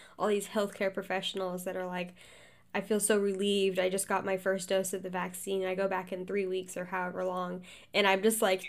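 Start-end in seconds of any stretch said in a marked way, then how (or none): none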